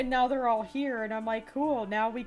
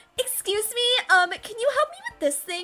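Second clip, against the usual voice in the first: put-on girlish voice, pitched way up; 11 semitones higher, 7 dB louder than usual. Retelling asking someone for help, in a girly voice. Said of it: "my voice just gets so girly".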